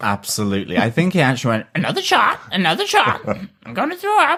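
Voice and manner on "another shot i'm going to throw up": parrot voice, much higher, slower. Retelling the phrase the parrot picked up in the house, parrot voice. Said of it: "I didn't want to do the parrot voice".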